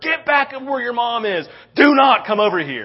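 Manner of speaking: loud high scream. Retelling a man collapsing, ordering his daughter back to her mom: retelling a scream. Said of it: "I'm screaming at her".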